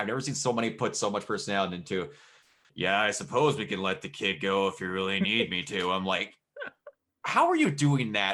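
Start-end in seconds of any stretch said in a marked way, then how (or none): 2.7-5.9 imitated flat, deadpan monotone. Quoting a person with the most monotone voice, imitating a monotone voice. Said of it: "the most monotone voice on the entire planet".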